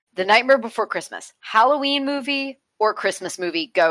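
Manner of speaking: ordinary talk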